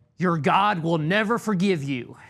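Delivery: loud shouting right up close. Retelling what an advocate shouted in their face: imitating someone shouting. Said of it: "got in my face and shouted at me".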